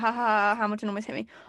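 play-acted chuckling through the words. Retelling a driver's team radio message, imitating someone laughing on radio. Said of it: "about the whole team radio thing where he's laughing".

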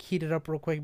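normal talking voice

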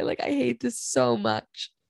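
near tears, swooping, tearful voice. Talking about something that makes you deeply uncomfortable, near tears. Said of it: "I'm actually about to cry".

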